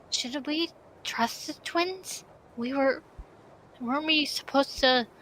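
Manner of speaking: slow stage whisper, in character. Voicing Amelia whispering to Daniel about the twins: whispering in character. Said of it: "She whispers".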